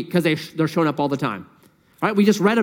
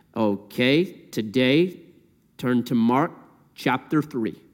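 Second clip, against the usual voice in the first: mock level, deadpan, low, flat monotone; 6 semitones lower, 4 dB quieter than usual. Speaker imitates a man opening his message, imitating a flat voice. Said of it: "he would read his messages in a flat voice".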